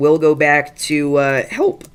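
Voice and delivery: voice cracking mid-word on help. Streamer thanking viewers for donations, with a horrible voice crack. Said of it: "that was a horrible voice crack".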